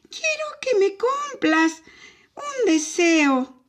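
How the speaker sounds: barely-there, very high, tiny thread of voice. Answering a dragon who asked why he came, in a tiny thread of voice. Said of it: "le respondió con un hilito de voz".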